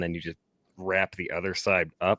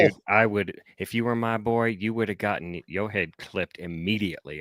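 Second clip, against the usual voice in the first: ordinary talk, nothing marked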